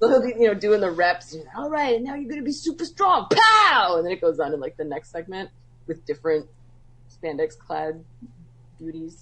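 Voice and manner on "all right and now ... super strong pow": put-on very high-pitched, laid-on-thick Boston accent. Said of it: "super thick Boston accent".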